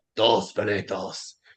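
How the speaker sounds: stern Spanish teacher voice, slow and low. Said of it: "And she'd be like".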